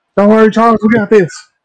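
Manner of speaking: very high-pitched holler. Reassuring a character named Charles during a fight: yelling. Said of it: "You're yelling like".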